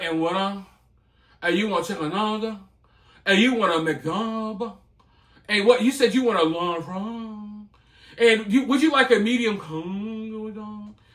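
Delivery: lazy, low-energy, sloppy, barely pronounced mumble. Imitating fast food workers taking an order: imitating lazy mumbling workers. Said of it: "they're too lazy to even talk".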